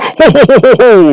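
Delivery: very slow, high, festive laugh, each laugh stretched. Joking about doing a holiday show: Santa voice. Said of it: "So maybe there's a Santa voice".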